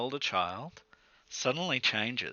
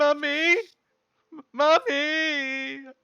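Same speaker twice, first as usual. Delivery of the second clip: put-on child's distressed cry, higher and louder; 5 dB louder than usual. Voicing a child crying from another room: child crying out for mummy. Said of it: "a cry coming from another room".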